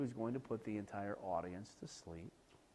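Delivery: low, flat, droning one-note monotone. Demonstrating how somebody with a monotone voice speaks: low flat monotone. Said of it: "somebody really low who speaks like this".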